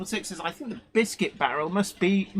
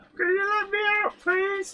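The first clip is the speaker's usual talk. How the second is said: very high, muffled voice, as if from another room; 11 semitones higher than usual. In an imagined scene, someone in the back room calls out to be let out, muffled voice. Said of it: "this muffled voice from the back room".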